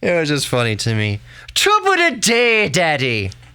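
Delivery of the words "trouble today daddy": put-on very high, swooping little kid voice, Irish accent. A parent voices their child, in a child voice with Irish accent. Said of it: "why does our child have an Irish accent?".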